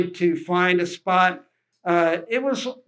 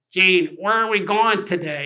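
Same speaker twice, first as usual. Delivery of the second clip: put-on strong New York accent. Quoting a boat captain asking where they go: George's strong New York accent. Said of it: "strong New York accent".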